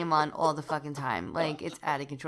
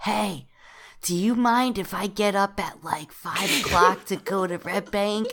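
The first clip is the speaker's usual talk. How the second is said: put-on whisper, higher; 4 semitones higher, 4 dB louder than usual. Retelling what he asked after she came home: imitating someone whispering. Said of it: "he leans over and he whispers to me".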